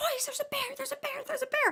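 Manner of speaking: shrieked, very high-pitched, rushed screaming. Retelling seeing a bear while car camping, the speaker re-enacts screaming to the boys. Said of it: "we just started screaming".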